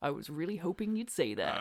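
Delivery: really smug, self-satisfied, low murmur. Retelling how John answers Batista's last refusal to quit, imitating someone really smug. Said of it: "John goes really smugly".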